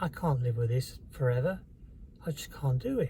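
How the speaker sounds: plain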